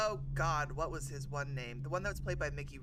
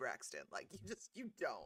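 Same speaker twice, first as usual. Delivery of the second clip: plain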